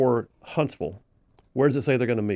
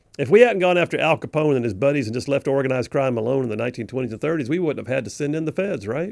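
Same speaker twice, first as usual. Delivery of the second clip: ordinary delivery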